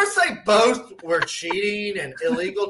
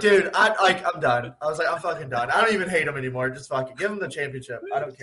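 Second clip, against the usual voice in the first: ordinary delivery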